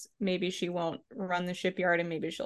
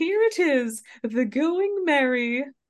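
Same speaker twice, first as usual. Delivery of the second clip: high, loud, jolly put-on kids' show voice; 7 semitones higher, 7 dB louder than usual. Retelling how a character presents the ship: imitating a jolly Sesame Street voice. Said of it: "such a jolly, like, Sesame Street kind of voice".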